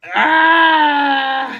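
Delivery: high, loud, pained yell.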